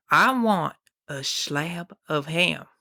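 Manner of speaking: put-on slow, thick southern drawl, accent cranked way up. Retelling what a man asked for: exaggerated thick southern accent. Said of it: "imagine the most southern accent you possibly could".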